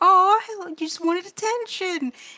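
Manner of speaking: put-on very high baby talk voice. Retelling a character talking to a cat, in a baby voice. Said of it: "immediately goes into baby voice for a cat".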